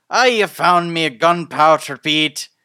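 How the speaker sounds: put-on Scottish accent. Retelling what a character said on being found, in his off Scottish accent. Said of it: "It was an off Scottish".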